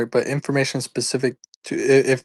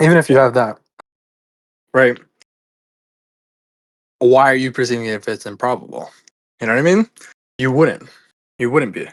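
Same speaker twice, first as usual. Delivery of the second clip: talking with mouth full of food. Asking the other speaker about perceiving the improbable, talking with food in mouth. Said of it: "I have food in my mouth".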